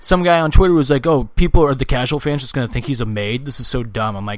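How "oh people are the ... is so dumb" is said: ordinary talk, nothing marked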